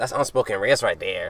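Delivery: put-on small, soft little teenage-fan voice. Retelling what a fan said to Duke Dennis: imitating a fan's voice. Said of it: "I'm just kinda making a little voice".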